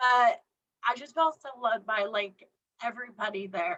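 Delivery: speaking through held-back tears, fighting off crying. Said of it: "I'm trying not to cry".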